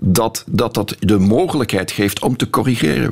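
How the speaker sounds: ordinary talk, nothing marked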